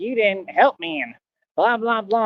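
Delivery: angry, sulky, aggrieved tone, all bent out of shape. Retelling the friend's reaction after being refused: imitating someone mad. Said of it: "he was all mad".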